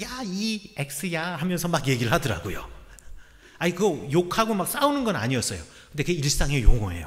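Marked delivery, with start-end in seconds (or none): 0.0-1.4 slow, drawn-out teasing, laughing, in odd voice. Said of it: "막 웃으시면서".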